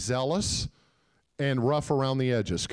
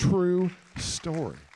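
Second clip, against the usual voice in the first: higher, slow, drawn-out delivery.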